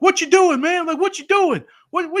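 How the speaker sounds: loud yelling, pitched very high. Retelling a wrestling segment, imitating Jey Uso yelling. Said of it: "he was yelling at Jimmy".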